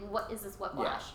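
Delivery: ordinary delivery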